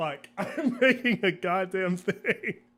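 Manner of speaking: slow, laughing mock exasperation.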